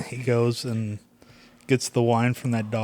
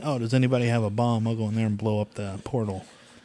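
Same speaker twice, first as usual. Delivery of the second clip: ordinary talk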